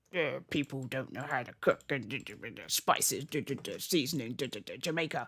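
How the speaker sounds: terrible sneering put-on voice. Imagining how his father would react to posh food, sneering impression of a father. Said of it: "that's a terrible impression of my father".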